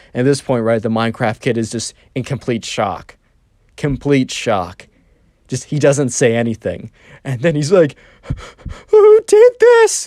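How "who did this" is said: mock very high, loud crying whimper, edged with rage. Retelling the Minecraft kid's shock at the destroyed rooftop, mock-crying, whimpery voice. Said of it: "kind of like a crying, whimpery voice".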